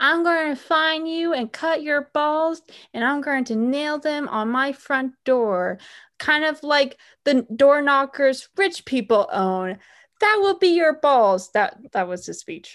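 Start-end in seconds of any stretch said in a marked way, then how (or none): 0.0-11.5 high-pitched, yelled, shouted voice. Recounting a father's funny speech vowing to find a man, imitating him yelling. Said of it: "like he's yelling".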